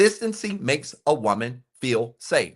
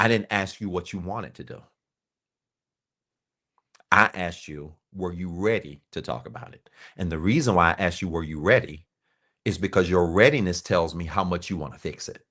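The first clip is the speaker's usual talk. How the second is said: calm and even, much lower pitch; 5 semitones lower than usual. Modeling what to say when she refuses to talk about it: calm voice. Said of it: "in a calm voice".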